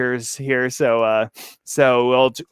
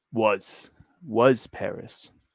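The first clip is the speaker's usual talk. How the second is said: deep, resonant, resounding voice; 3 semitones lower, 7 dB quieter than usual. Narrator voicing a horned man answering another man's question, deep, resounding voice. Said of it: "replied in his deep, resounding voice".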